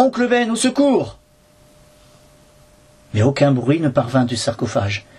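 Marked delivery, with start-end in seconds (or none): 0.0-1.2 high, desperate cry full of despair. The narrator calls to his uncle in a sarcophagus, desperate cries. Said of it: "Mes cris de désespoir".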